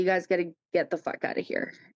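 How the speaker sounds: play-acted furious, fed-up, angry outburst. Retelling what he said the next day: imitating someone angry. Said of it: "he was pissed".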